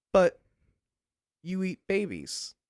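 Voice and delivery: acted hesitant, unsure tone with creeping doubt. Narrator voicing a player's reply to a sobbing Sasquatch, not sounding so sure. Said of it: "Not sounding so sure anymore".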